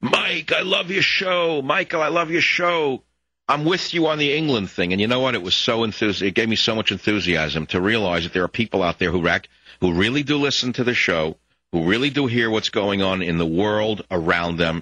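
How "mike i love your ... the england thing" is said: imitated man's shout, higher pitch. Retelling what a guy in a truck yelled at a crosswalk: imitating a guy yelling. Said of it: "And he yelled out".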